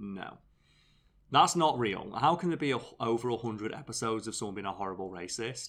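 normal talking voice

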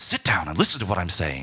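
put-on American accent. Mocking British actors playing Americans: imitating Brits doing American accents. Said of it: "a bunch of Brits going like".

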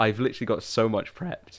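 voice breaking and cracking. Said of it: "that was voice break".

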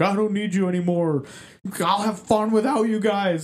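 snapping, angry, high, fed-up yell. Retelling a dungeon master yelling at players walking away: imitating someone yelling. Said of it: "he's yelling at 'em like".

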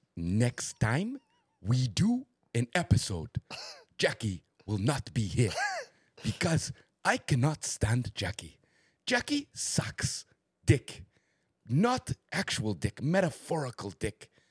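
best attempt at a put-on Nigerian accent. During a do-your-best-accent game, speaker talks in a Nigerian accent. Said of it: "That was my best Nigerian".

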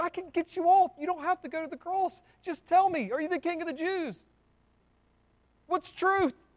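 high pleading voice. Retelling Pilate pleading with Jesus for an answer: imitating Pilate pleading. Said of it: "pleaded with him".

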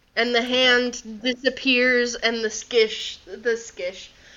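plain

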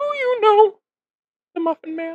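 tiny squeaking high-pitched voice. Showing the other speaker an impression, in a Gingerbread Man voice. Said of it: "my gingerbread man impression".

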